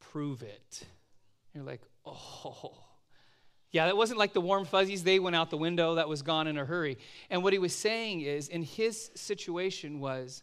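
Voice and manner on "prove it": low, gruff, hushed voice after throat clearing. Retelling what he said after clearing his throat, in a low, gruff voice. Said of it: "In his low, kind of gruff voice".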